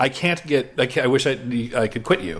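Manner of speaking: ordinary talk, nothing marked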